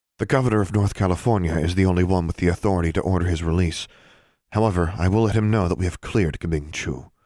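plain

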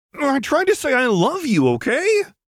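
very high, swooping, defensive outburst. Pressed by the other girl to repeat what she tried to say, defensive. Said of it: "Lux replied defensively".

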